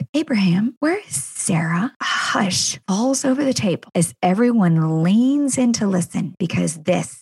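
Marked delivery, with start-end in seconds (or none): 0.1-1.9 deliberately pointed, probing tone. Retelling a guest at dinner, imitating a pointed question. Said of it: "pointedly asked".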